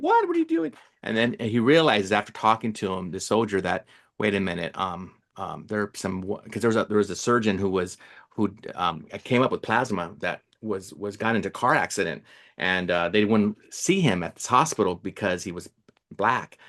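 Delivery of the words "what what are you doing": very high shocked outburst. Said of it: "And so he was like".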